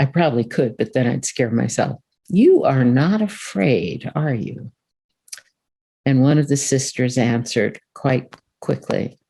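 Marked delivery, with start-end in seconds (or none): 2.3-4.7 put-on villain voice, slow, swooping and sinister. Retelling what a man said to the sisters, in a put-on evil voice. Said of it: "evil in my voice there".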